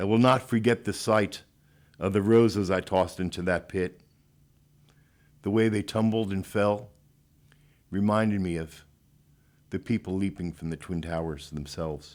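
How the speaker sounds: choked-up, breaking voice, full of emotion. Speaker remembering nine eleven, choked up. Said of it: "I get a little choked up".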